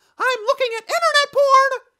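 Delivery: very shrill, very loud, high cartoon mouse voice. Showing off the voices he can do, he does Mickey Mouse: Mickey Mouse voice. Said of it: "I make Mickey Mouse say that he's looking at porn".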